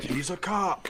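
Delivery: very high, sudden shouted outburst. Discussing the film, a speaker quotes a line, imitating Vince yelling. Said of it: "when he just yells".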